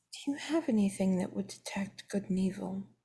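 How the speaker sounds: very high-pitched whispered aside. Asking another character something in secret: whisper. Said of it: "I'm gonna whisper to R L".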